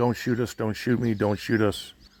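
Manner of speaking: acted laughing through the words. Retelling a confrontation, quoting a guy with his hands up, imitating him laughing.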